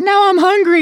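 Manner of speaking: voice pitched very high. YouTuber recounting binging a show, imitating his girlfriend's voice. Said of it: "That's how I imitate her".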